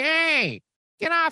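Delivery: big, dopey, very high dumb voice. Retelling a time he tried to fight: Urkel's big stupid voice. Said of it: "He got in his big, stupid voice".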